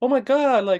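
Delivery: put-on high pitch. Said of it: "He's like".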